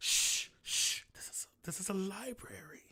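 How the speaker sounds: quiet, hushed shushing. Voicing a robed figure in a library shushing the party: shushing robed librarian. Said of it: "dressed in dark robes, and he's gonna be like".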